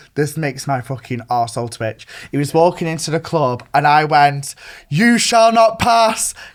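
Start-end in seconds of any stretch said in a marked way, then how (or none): 4.9-6.4 mock very loud yell, very high-pitched. Retelling shouting at someone walking into a club: retelling a very loud shout. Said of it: "dead loud".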